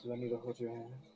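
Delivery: very soft, hushed, seductive murmur. Retelling what he said to the group, imitating his seductive voice. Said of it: "He says in his seductive voice".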